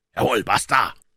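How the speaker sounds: loud, forceful, hissed words. A man springs toward the standing doctor, echoing him: hissed. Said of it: "zischte der Indianer Joe".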